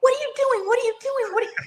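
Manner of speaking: put-on very high, repeated screaming. Retelling own screaming while watching a football game, re-enacting own screaming.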